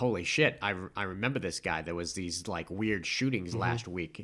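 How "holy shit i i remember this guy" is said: plain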